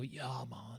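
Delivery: put-on stoned voice. Showing how the phrase must be said: put-on stoned voice. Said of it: "like you're stoned".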